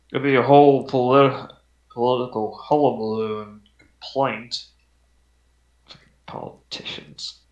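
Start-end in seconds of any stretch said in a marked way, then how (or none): 5.8-7.3 muttering quietly, quieter. Voicing a guard complaining about a blockade: muttered under his breath. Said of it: "He says under his breath".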